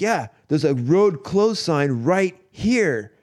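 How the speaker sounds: slow, high, drawn-out hollering yell. Retelling how a man yelled at guys on motorcycles, imitating someone yelling. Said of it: "he's yelling at the guys on the motorcycle".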